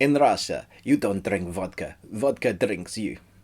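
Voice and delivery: home-made put-on attempted Russian accent. Joke line before the Review Tuesday intro, in an attempted Russian accent. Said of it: "That was my uh, attempt at a Russian accent".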